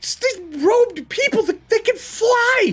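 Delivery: frantic, panicked stammering. Voicing a fleeing man answering questions: panicked stammering. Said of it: "This man is panicked".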